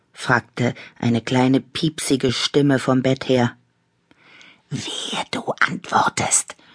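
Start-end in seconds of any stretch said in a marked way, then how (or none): 4.7-6.5 whispered, hushed, breathy, hissing voice. Annabella warns a companion not to answer a small voice's question, hissing. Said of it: "zischte Annabella".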